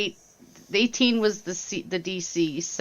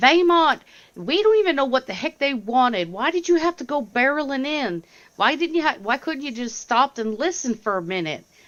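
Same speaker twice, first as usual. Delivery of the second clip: high-pitched shouting voice; 6 semitones higher, 3 dB louder than usual. A player speaks in character to Vaymont, yelling at him. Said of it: "I'm gonna yell at him and go".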